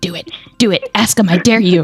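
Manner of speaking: little, full-on goading gremlin voice. Describing a creature hallucinated in a church pew egging you on, in a gremlin voice. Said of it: "Full on gremlin voice".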